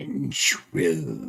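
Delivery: creepy whisper. Game master voicing a voice heard among the Drakhorn, eerie whisper. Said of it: "this eerie whisper".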